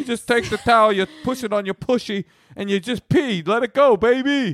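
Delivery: put-on New York accent, pushed very high. Repeating the other speaker's product description: new york accent. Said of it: "that vibe was very New York".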